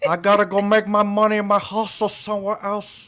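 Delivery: put-on movie-gangster Cuban accent. Reenacting the scene where he quits and throws his apron, Tony Montana Scarface impression. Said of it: "that's [name]'s Scarface".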